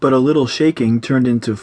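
ordinary delivery, nothing marked

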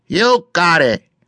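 small, high, squeaky little voice. Reading a story aloud, a character agrees to give a hug, in a squeaky little voice. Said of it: "in his squeaky little voice".

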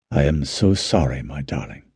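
softly spoken, under the breath. A narrator reads a character's line, said softly. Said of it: "Adrian said softly".

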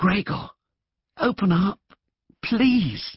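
pleading whisper. The sister whispers to gregor through the door, asking him to open up: whispered plea. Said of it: "plaintive voice of his sister. ... came the soft, plaintive voice of his sister".

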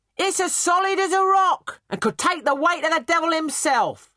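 very high, loud, boastful hawker's cry. Narrator reads the barber calling to people on the riverbank, Master Mullins shouting. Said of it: "[name], the barber".

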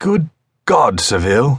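high, exclaiming cry. Winterborne answers Seville, who has just laughed at them: exclaiming. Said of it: "Winterborne exclaimed".

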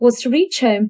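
ordinary delivery

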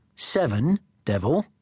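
ordinary delivery

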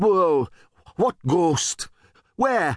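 high-pitched, startled, shocked stammering. Startled by the word ghost, he bangs his head, stammering in surprise. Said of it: "started to stammer".

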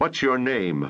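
gruff, rough growling voice. Narrator reads a man confronting a woman he has ordered to stand, growled. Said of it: "the man growled".

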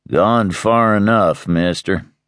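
drawn-out, unhurried drawl. Reading a story aloud, Munger warning a man for the last time, drawling. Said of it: "he drawled".

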